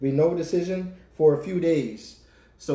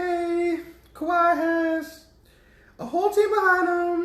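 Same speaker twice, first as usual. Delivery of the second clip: very high-pitched, slow, stretched-out female voice. Arguing about a player staying in Toronto, imitating a woman's voice. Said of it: "is that your interpretation of her voice?".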